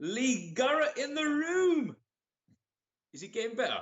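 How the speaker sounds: put-on Geordie accent, pitched very high. Trying out a put-on Geordie accent in conversation with the others. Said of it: "Is my Geordie getting better?".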